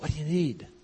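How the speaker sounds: hushed half-whisper, off-mic. Retelling walking over to his dad with the mic hidden: retelling a half-whisper. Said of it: "And I whispered".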